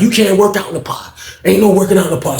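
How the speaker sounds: put-on barking, barked-out delivery. Retelling how an officer ordered a man to stop: imitating a barked order. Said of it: "barking at him".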